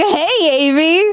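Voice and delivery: put-on, high-pitched dad-style voice. Imitating the listener's earlier bit, the speaker does a high-pitched dad voice. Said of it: "you put on your like high pitched dad voice".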